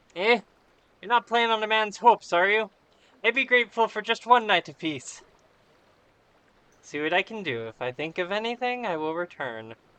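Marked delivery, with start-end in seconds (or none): 1.0-5.2 loud, over-the-top, put-on Irish accent. Reading a character's lines aloud, in a put-on Irish accent. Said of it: "my Irish accent".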